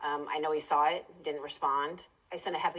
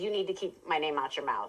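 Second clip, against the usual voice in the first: put-on seething, angry monotone. Retelling what the caller said on a phone call: imitating a seething, angry monotone. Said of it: "his voice got very angry, very monotone".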